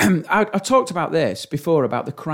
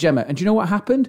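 ordinary talk, nothing marked

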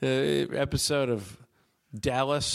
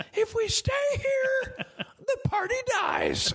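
play-acted very high, very slow, swooping, drawn-out rallying yell. Retelling rousing the group on Fourth of July: imitating own past yell. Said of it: "right when I yelled that".

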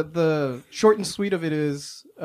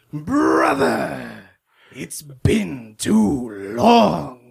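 very slow, long drawn-out, stretched delivery. Showing how the brothers answer the phone: Metal Gear Solid 4 quote voice. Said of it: "answer the phone like this".

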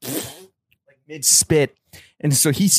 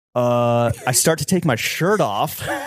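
ordinary delivery

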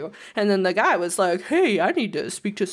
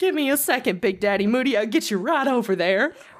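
mock confident, convinced delivery; 3 semitones higher than usual. Retelling what a woman said on the phone, imitating her confident, convinced delivery. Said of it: "she said it with such confidence and conviction".

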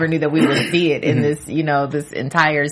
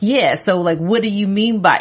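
mock pretentious, superior, smug, self-satisfied tone; 4 semitones higher than usual. Imitating a character smiling at Ghost while talking: imitating Silver's smug smiling tone. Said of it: "how he smiles when he's looking at Ghost".

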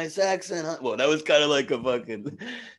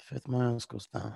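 rough, creaky, scraped-out voice; 4 semitones lower, 9 dB quieter than usual. Repeating a line back in a movie scene: Bruce Willis impression. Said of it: "I've never heard your Bruce Willis".

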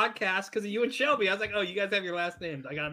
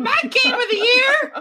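very high, shrill, very loud voice; 15 dB louder than usual. Imitating Phil with an exaggerated high voice: shrill Phil impression. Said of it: "the most shrill voice".

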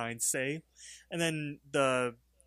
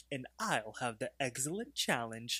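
mock cunning, sly, sneaky, knowing tone; 6 dB quieter than usual. Retelling a cartoon scene, ordering at a restaurant: imitating Rigby sounding sly. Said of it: "up from his menu all sly".

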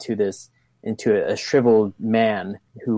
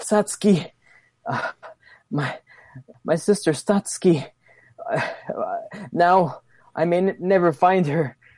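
halting, agonized, anguished dying voice, pitched up; 8 semitones higher than usual. Voicing a fighter falling to her knees after a heavy attack: dying in agony. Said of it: "she falls to her knees and she's like".

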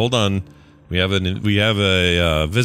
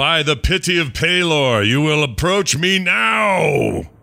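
thunderous, amplified, pitched-up booming voice, words stretched; 8 semitones higher than usual. A game player voices their character's call, booming three times louder. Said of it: "three times as loud as my normal voice".

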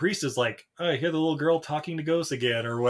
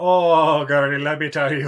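loud, slow, drawn-out put-on Irish accent; 7 dB louder than usual. Imitating a priest character from a movie: Irish accent. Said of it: "Where'd the Irish accent come from?".

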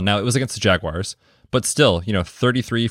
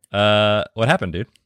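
ordinary talk

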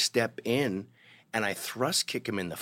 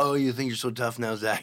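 mock drunken speech. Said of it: "He's hammered drunk".

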